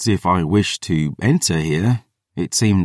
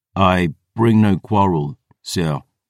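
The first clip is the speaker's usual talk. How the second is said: usual speaking voice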